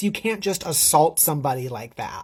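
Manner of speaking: normal talking voice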